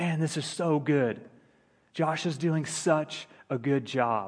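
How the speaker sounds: loud, hushed stage whisper, meant to be overheard. Recalling a man in the back nudging Frank during his speech: retelling a loud whisper. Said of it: "he said in a loud whisper".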